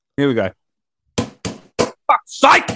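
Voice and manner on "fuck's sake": mock frustrated, exasperated outburst. Performing a game-show buzzer as struggling with a dying remote: mock frustrated curse. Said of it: "the sound of me trying to get my remote to work when the batteries are starting to die".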